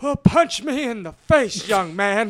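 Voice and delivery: put-on high, grizzled old-man voice. Telling a story about an old man snapping at a young man, imitating a grizzled old man. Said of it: "this old man grizzle up his little gray beard and his voice".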